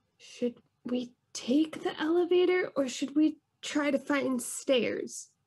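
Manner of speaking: high, hushed stage whisper. Asking another character which way to go, half-whispering in character. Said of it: "I'm gonna whisper".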